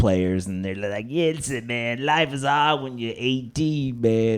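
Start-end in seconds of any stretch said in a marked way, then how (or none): 1.1-4.4 slow, drawn-out fake old blues singer voice. Mocking Gen X kids who talk like old blues players, fake old blues voice. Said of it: "You got thoughts on that voice".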